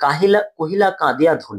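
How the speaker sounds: normal talking voice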